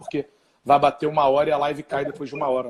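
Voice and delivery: rushed, fast talk. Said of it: "eu vou falar um pouquinho mais rápido".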